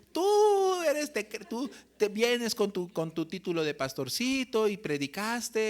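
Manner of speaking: put-on mocking tone. Retelling how a woman taunted him about preaching: imitating someone mocking. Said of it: "empezó a burlarse de mí".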